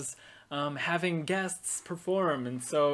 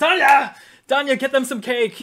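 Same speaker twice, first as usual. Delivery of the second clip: full-throated, high, very loud yell; 9 semitones higher, 13 dB louder than usual. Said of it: "She yells for Danya".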